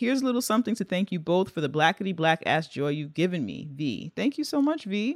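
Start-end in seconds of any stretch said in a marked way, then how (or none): none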